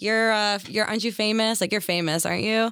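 ordinary talk

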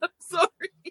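helpless laughter, very high. Mid-conversation, apologizing while you can't stop laughing. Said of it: "I can't stop laughing".

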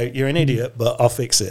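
normal talking voice

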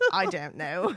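put-on speaking with a British accent. Imitating how Bonnie Wright might answer: Bonnie Wright with a British accent.

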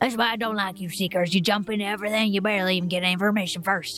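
put-on heavy southern accent in an old farmer voice. A game master voices an older farmer telling the Seekers why he dislikes them, thick southern accent. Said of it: "you see that he is an older gentleman with very tan skin, deep brown eyes, with that thick southern accent he's got going on there. / you see that he is an older gentleman with very tan skin, deep bro".

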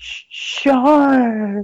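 put-on spaced-out drunk hippie cry, high, "shark" drawn out. Retelling a movie scene, a hippie spotting a shark: imitating a wasted hippie. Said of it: "she sounds like she's wasted".

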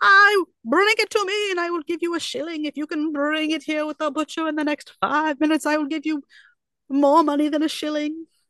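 play-acted, high, loud shouting and screaming. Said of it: "he's screaming at a child".

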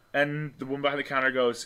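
plain

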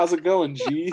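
loud, completely sincere delivery. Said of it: "Just completely sincere".

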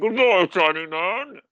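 very slow, muffled, drawn-out villain voice. Showing your take on a character while covering your mouth, in a Bane impression with mouth covered. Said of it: "I can't do the Bane impression without covering my mouth".

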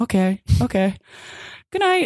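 put-on drowsy, barely-awake, slightly high voice. Retelling how the parents, falling asleep, replied: imitating sleepy parents. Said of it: "they're both just so sleepy".

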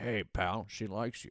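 gruff, real garage mechanic voice. Voicing a starfish in a comedy retelling: auto mechanic kind of voice. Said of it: "It's got a real auto mechanic kind of voice".

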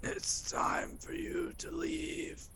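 hoarse, very raspy, strained whispered voice. Game master voicing Gerald speaking to Quentin, in a very raspy, strained voice. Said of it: "in a very raspy, very strained voice".

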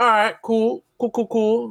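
high, breezy, mock-casual tone. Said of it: "I'm like".

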